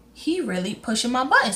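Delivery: normal talking voice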